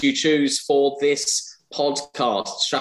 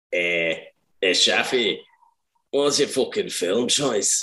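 comic put-on Scottish accent; 3 semitones lower than usual. Repeating the other host's question to a guest, imitating their Scottish accent. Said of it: "Doing your Scottish accent".

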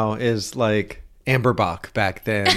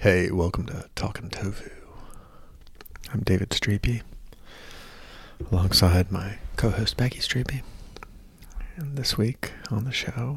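put-on public radio voice, quieter; 2 semitones lower, 9 dB quieter than usual. Podcast host opening the show beside his co-host, NPR voice. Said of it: "Your NPR voice".

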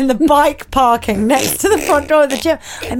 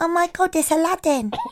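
bad put-on Scottish accent, toddler-like; 4 semitones higher, 5 dB quieter than usual. Speaker retelling their niece shouting at a train station, failed scottish toddler accent. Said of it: "that is not Scottish".

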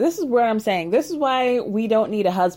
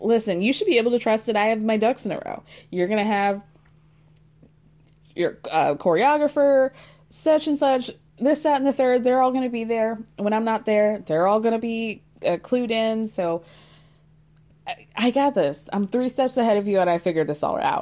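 plain

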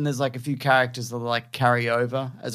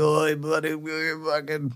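put-on gruff voice; 3 semitones higher, 4 dB quieter than usual. Describing an actor from a show, imitating him: gruff Brett Goldstein impression. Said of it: "he's the gruff guy in Ted Lasso".

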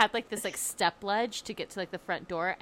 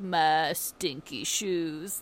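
put-on stuffy, congested sick voice; 2 semitones lower than usual. Teasing a sick friend by imitating a stuffy sick voice: sick Phoebe from Friends voice. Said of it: "She's like".

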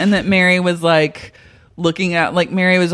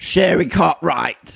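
put-on rough, creaky, masculine man's voice. Acting out a heavenly figure calling sherry: attempted masculine voice. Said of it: "I was trying to do, like, a masculine".

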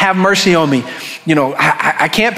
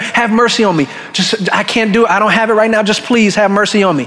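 acted-out pleading, begging voice; 2 semitones higher than usual. Speaker retells a scripture story, acting out the servant begging. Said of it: "Begged him".

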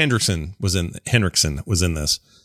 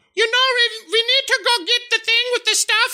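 very high, blaring, super loud voice. Describing an elevator scene in the game with Garrus, doing a super loud Tali voice. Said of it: "And she's super loud".

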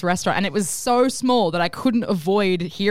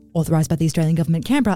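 very fast, rapid-fire, rattled-off delivery; 3 semitones lower than usual. Parody government ad, reading the authorisation tag: very fast disclaimer. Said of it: "I'm talking very fast".

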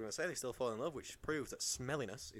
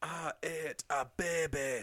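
put-on Scottish character voice, higher and louder; 5 semitones higher, 5 dB louder than usual. Quoting a line from the Austin Powers character: Fat Bastard voice. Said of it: "Of his Austin Powers character, Fat Bastard".

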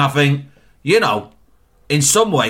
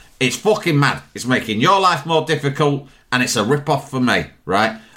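plain

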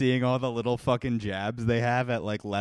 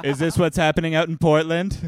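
loud, high, baffled, confused voice; 6 semitones higher, 8 dB louder than usual. Imitating Donald Trump confusing a movie with the news: Donald Trump impression. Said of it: "you have a better Trump impression".

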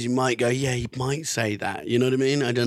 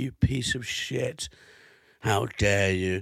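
mock furious, abusive angry tone, lower; 3 semitones lower than usual. Retelling how people on Twitter reacted: imitating abusive angry tweets. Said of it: "not usually abusive were like".

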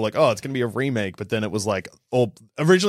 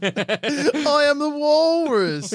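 higher-pitched put-on Liverpool accent. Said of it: "I had a [name] voice".

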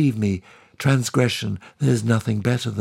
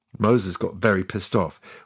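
usual speaking voice

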